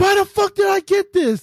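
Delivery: very high, shrieking, screaming rant. Retelling how a guy reacted while pointing at his Xbox, mock screaming and cursing. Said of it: "he's like screaming and cursing".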